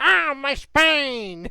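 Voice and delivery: loud, belted, cheap knockoff video game character voice. Joking after a character hits the spines: off-brand Papyrus voice. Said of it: "Why do you sound like an off-brand papyrus?".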